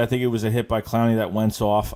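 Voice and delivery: ordinary talk, nothing marked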